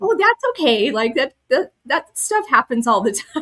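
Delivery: put-on casual matter-of-fact tone. Retelling what the Qigong teacher said: imitating a matter-of-fact tone. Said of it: "She said it very matter-of-factly".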